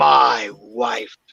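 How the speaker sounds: acted very angry voice. Retelling what a disembodied voice answered when asked who murdered it, mock very angry. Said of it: "a very angry voice said".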